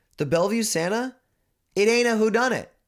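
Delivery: worked-up, fired-up rant pitched very high. Arguing a film's killer is supernatural, fired up and excited. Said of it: "I'm getting fucking fired up".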